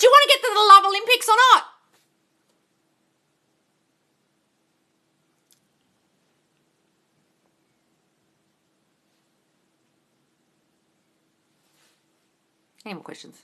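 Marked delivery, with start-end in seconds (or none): 0.0-1.6 shrill, very high, full-volume shouting. Speaker pushing listeners to send in questions, yelling. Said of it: "I'm yelling".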